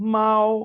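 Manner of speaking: high level first tone on mao, held steady. Chinese tone lesson, the word for cat, high level tone on "mao". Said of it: "static टोन के साथ पढ़ेंगे".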